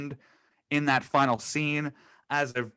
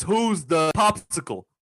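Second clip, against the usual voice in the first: put-on New York accent; 3 semitones higher, 4 dB louder than usual. Praising an actor's line reading in a film: new york accent. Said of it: "in his sort of New York voice".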